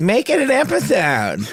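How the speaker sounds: very high-pitched, very slow, drawn-out salesman voice. Retelling what the ad salespeople said in reply: imitating ad salespeople. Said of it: "That is a great ad sales impression".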